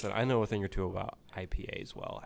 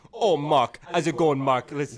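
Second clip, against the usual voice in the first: put-on South African accent, high-pitched and loud; 5 semitones higher, 7 dB louder than usual. Urged to do the accent, the speaker is imitating Auntie Donna's South African accent. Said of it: "do the South African accent".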